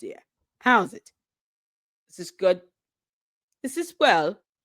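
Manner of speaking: put-on, fake French accent, tried out. Trying out a french accent for a video: put-on french accent. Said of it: "how's my French accent".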